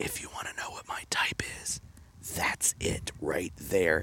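very quiet, breathy whisper. Retelling what Heather whispered in his ear at a concert: imitating Heather whispering. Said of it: "she whispers in my ear".

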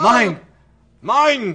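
high, loud, shrieking zombie scream. Game master voices a creature climbing up through the ground at Beryl, screaming. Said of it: "starts screaming".

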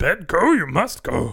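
bad, slow, drawn-out, high, loud creature voice. Joking about Yoda at bedtime, doing a bad Yoda voice. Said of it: "That's a bad Yoda".

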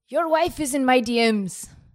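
booming, very loud, high-pitched, boastful bellow. Asked to be Conor McGregor just after his leg was broken, answer in a Conor McGregor impersonation. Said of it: "Give us a Conor McGregor impersonation now".

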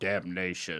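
very deep, dropped voice. Imitating a horror movie character after talking about a new movie: imitating Pinhead's voice. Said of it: "Is that what the Pinhead guy sounds like?".

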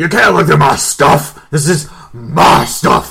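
argumentative delivery. A narrator voices townspeople objecting while their things are searched: putting up a big argument. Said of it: "putting a big argument".

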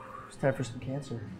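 hushed, breathy, very quiet low whisper under the breath. Saying a catchphrase in character while shooting at a cat: said real low. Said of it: "I just say it real low".

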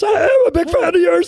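very high-pitched, loud, squeaky put-on voice. Asked whether someone said anything, quoting them in a high-pitched voice. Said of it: "This high-pitched voice".

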